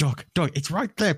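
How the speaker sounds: re-enacted yell. Retelling yelling at someone who kept getting shot, retelling shouting at the screen. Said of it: "I was shouting at the screen".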